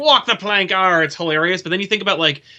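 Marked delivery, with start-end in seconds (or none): 0.0-1.0 comic stock pirate voice, loud and pitched-up. Joking about how a comic villain sounds: pirate voice. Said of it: "a pirate being like".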